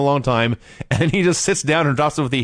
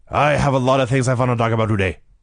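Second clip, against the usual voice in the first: bad, mumbled announcer voice, words run together; 2 semitones lower than usual. Showing how Nikita Koloff spoke in promos: terrible Nikita Koloff impression. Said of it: "that was a terrible impression".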